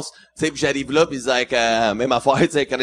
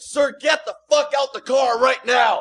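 put-on, very high-pitched officer-like yell; 12 semitones higher than usual. Retelling a border stop, the speaker imitates a customs officer yelling at him. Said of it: "il me crie après".

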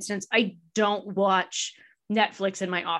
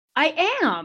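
surprised, caught-off-guard tone with raised pitch; 6 semitones higher than usual. Answering whether happy with what was achieved: sounding surprised. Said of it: "I don't know why I sound so surprised".

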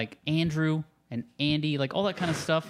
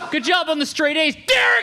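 very high, very loud, shrill angry yell, acted out; 13 semitones higher, 9 dB louder than usual. Friends imitate how a kid's dad would yell his name; mock-angry dad yell. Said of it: "You gotta say it like you're mad at".

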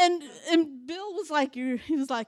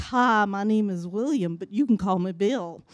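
put-on very low, deep American Southern accent; 7 semitones lower than usual. Retelling how a man came over and introduced himself, imitating Bill's southern accent. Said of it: "he had a southern accent".

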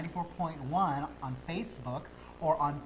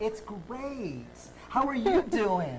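fake perky cheer in a high, put-on peppy voice; 5 semitones higher than usual. Copying the other speaker's mood: mock-peppy voice. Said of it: "I'm really peppy like you are right now".

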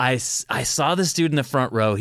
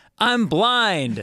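laughing through the words, high pitch; 8 semitones higher than usual. Telling a story about a crowd, quoting the man's reply, imitating him laughing while talking. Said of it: "he's laughing".

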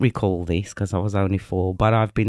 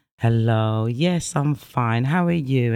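slow, polished, proper English; 3 semitones higher than usual. Retelling how Mum answered the phone: imitating Mum's perfect English. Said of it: "She spoke perfect English".

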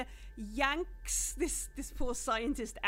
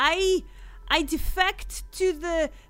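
put-on timid broken English, much higher pitch; 5 semitones higher, 9 dB louder than usual. Retelling a voice heard from the back of a room, put-on timid broken English. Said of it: "Is very, very timid, and the English is very broken".

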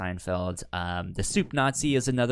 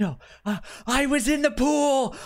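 mock aghast, horrified, very high and very slow; 4 dB louder than usual. Retelling a scene where a man looks down and protests, acting out horrified reply. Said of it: "he gets horrified and he's just like".

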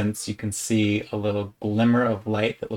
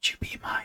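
hushed, soft, breathy whisper; 8 dB quieter than usual. A speaker asks someone known only through a friend, in a whisper. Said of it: "a whispered voice goes".

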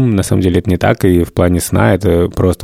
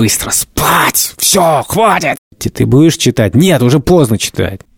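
put-on high, angry, fed-up, irritated tone; 7 semitones higher than usual. Retelling what they say when the children won't go to bed, acting out irritated scolding. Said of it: "таким злым, таким раздраженным".

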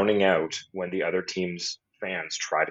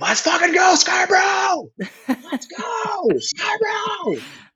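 mock very high, loud, very slow rising swooping scream; 5 dB louder than usual. Retelling fans who bet on a player screaming whenever he touches the puck, retelling fans screaming. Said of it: "they're screaming".

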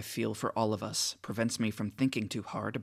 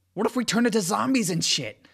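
babbling, worked up with excitement; 11 semitones higher, 9 dB louder than usual. Fitch keeps babbling his worries to a weary Nick; says it excitedly. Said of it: "He adds excitedly".

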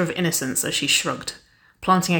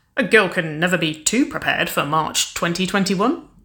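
plain

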